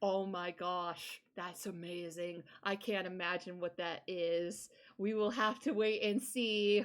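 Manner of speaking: sarcastic, very slow and drawn out. Replying to someone's hint about an exciting project before ending the stream, sarcastic. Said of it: "That sounded sarcastic".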